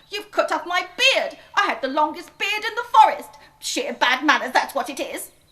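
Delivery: shrill, very loud, furious little dwarf voice. Narrator reading the little dwarf after his beard is cut off, angry dwarf crying out. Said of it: "they saw it was a little dwarf with a red, / they saw it was a little dwarf with a red, angry face, and it caught his very long beard on a piece of wood that was attached to the tree trunk. / he said".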